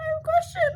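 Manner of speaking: put-on timid, nervous, very high voice. Speaker retells asking a question of people who had been yelling: imitating a nervous question. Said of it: "Like very nervously".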